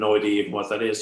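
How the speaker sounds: normal talking voice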